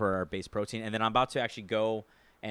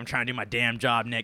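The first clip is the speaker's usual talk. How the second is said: put-on displeased, unhappy older man voice, louder; 4 dB louder than usual. Imitating an older guy at work who was filmed: imitating a displeased older guy. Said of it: "He did not look pleased".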